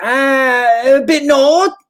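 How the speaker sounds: put-on Scottish accent, very high and drawn out. Retelling a conversation, quoting a woman's reply in a scottish accent. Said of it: "doing a what it seems to be a Scottish accent".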